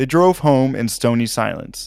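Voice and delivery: plain reading voice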